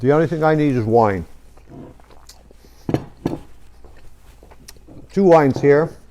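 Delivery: speaking while chewing, mouth full. Tasting the pork just cooked and introducing wines, talking with mouth full. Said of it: "sorry to speak with my mouth full".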